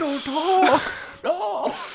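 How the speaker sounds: mock panicked screaming. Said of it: "start screaming".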